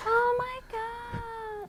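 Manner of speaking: very high, loud, drawn-out god. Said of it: "That's how she talked".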